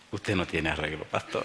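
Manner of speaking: chuckling, amused, laughing through the words. Retelling the sick man laughing and calling the pastor hopeless: imitating someone laughing while talking. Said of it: "se ríe, se ríe y me dice".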